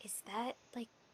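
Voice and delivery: hushed voice. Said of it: "Are you whispering this to Akron?".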